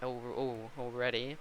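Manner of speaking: very quiet, hushed voice cracking on an exclamation. A qualifying commentator notices someone already coming out, voice cracking. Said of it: "Bad voice crack".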